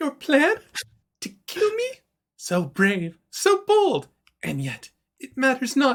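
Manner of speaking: very high, swooping, cackling villain voice. She appears in the center of the room and answers those who came to kill her, cackling. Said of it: "She starts cackling".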